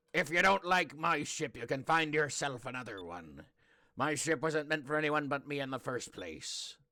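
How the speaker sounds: put-on ordinary pirate voice. Voicing Drachma after dropping the brogue: Drachma regular pirate voice. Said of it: "going back to just a regular pirate, you know, voice".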